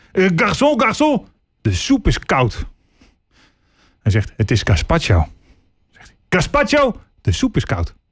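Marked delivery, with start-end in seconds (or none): 0.2-2.7 mock, slow, irritated, annoyed complaining voice. Telling a joke, the speaker acts out a diner calling the waiter, mock-irritated. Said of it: "Is geïrriteerd".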